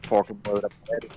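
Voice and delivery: whispering. Whispering a warning to Desdemona while sneaking: whispering in character. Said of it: "I whisper to Desdemona".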